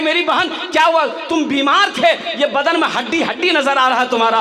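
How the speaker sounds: shocked, sudden outburst.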